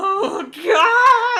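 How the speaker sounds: mock very high, loud sobbing wail, "God" stretched. Retelling own reaction to a timed math test: imitating own past crying. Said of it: "I'm literally crying, shaking, crying, sobbing".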